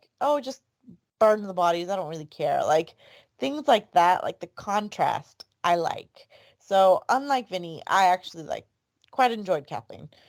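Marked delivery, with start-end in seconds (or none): none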